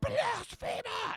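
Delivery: booming, screaming voice. Voicing a blasphemer accusation ringing out: screaming from the abyss. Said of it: "like, screams from the abyss".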